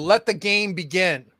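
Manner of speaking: loud, booming, yelled-out voice. Voicing Neuronexus as he greets the players: yelling. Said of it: "he yells out".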